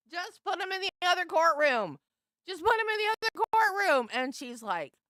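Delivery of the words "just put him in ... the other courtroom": very high, very loud, shrill, exasperated yelling. Speaker recalls watching a trial on TV: retelling screaming at the TV. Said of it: "I was screaming at the T V".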